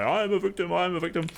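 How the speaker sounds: put-on, high-pitched screaming, repeated. Retelling a show character who is barred from surgery: imitating someone screaming. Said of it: "starts screaming at the guy".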